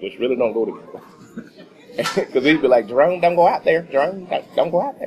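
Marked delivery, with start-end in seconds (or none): 2.9-5.1 put-on high-pitched Southern accent, calling out. Retelling the manager's words at work, imitating a high-pitched Southern accent. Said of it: "he had a high-pitched voice and a southern accent".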